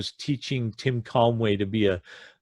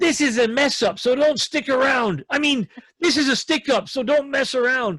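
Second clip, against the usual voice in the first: mock shrill, very high-pitched, frantic shout; 13 semitones higher than usual. Retelling a bank robber sketch: imitating Tim Conway yelling. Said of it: "Tim Conway yells out".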